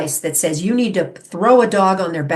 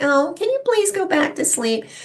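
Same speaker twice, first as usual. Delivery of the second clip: pleading whine, very high-pitched; 10 semitones higher, 3 dB quieter than usual. Illustrating someone who is not being strong asking politely; mock whining. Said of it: "That's just whining".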